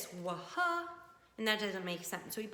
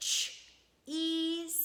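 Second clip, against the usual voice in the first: ch and e stretched slowly, pitched up; 7 semitones higher than usual. Showing how to sound out the word from the book: stretching out each sound. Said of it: "So we stretch it".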